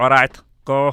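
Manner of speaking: robotic monster voice, loud. Retelling a tall chef's instructions in a robotic Frankenstein voice. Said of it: "he literally sounded like this".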